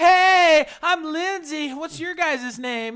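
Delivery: put-on very high, loud, drawn-out cheery girl voice. Retelling a girl walking up to introduce herself: imitating a cheery girl. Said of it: "they're all fucking cheery and shit".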